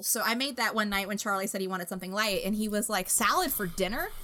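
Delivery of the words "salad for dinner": baffled, can't-believe-it, incredulous tone. Recalling Charlie's reaction to a salad for dinner, imitating Charlie's incredulity. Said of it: "Like that was the most preposterous thing".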